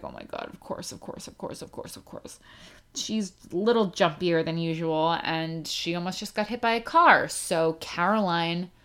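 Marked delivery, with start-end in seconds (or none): 0.0-2.4 hushed, whispered, repeated muttering under the breath. Retelling walking away after the dog nearly got hit: imitating own muttering. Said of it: "I just walked away muttering".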